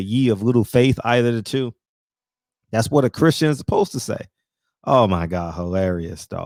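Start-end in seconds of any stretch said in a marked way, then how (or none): none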